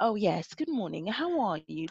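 soft, polite, professional voice. Describing how some people put on a facade at work: phone voice. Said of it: "Phone voice".

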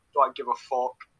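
ordinary delivery

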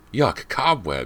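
high, frantic outcry. Walking into cobwebs on the stairs, she cries out: cried frantically. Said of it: "she cried, frantically trying to brush".

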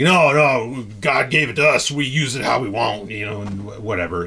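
fake slow Southern drawl with drawn-out "no". Describing someone who doesn't care about ecology, the speaker voices them: put-on southern voice. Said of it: "I shouldn't do that in a Southern voice".

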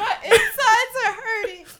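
very high voice, words squeezed out through laughter. Reacting to something funny another speaker just said: laughing hard while talking. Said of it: "I'm crying".

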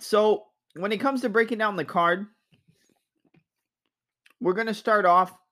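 talking with mouth full. Starting to break down the card for viewers after taking a bite, talking with mouth full. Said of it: "I had to take a bite of something".

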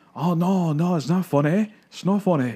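put-on little girl's Scottish accent, high-pitched. Describing a favorite video, quoting the little girl in it: imitating a little girl's accent. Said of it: "just because of this little girl's accent".

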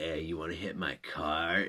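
soft, creepy, sinister voice. Retelling what a kid said when offering a cart, imitating a creepy voice. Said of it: "and like all creepily".

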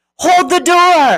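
mock yell. Retelling a scene from a show, imitating someone yelling. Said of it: "they're yelling".

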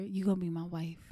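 eerie, hushed half-whisper, very close to the mic. Imitating a stranger half-whispering in someone's ear: creepy half-whisper. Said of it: "you're saying it creepy as hell".

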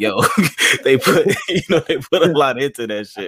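loud, high, impressed laughing exclamation.

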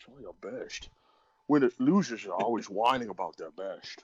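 put-on Scottish actor voice. Quoting a favorite movie line from The Rock: Sean Connery impression. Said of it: "That is excellent Sean Connery impression".

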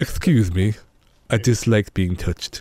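low, deep horror-film mummy voice. Showing another speaker the only impression you can do, Boris Karloff as the mummy. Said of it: "the only impression I could do is Boris Karloff as the mummy".

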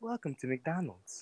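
very quiet, machine-like, synthetic AI voice. Asked by friends to say the McDonald's greeting, sounding like an AI. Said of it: "You sound like an AI".

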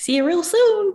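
high, loud squeaking voice. Guest, asked by the host to close the Disney episode, does Mickey Mouse impression. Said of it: "your Mickey Mouse impression".

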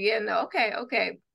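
usual speaking voice

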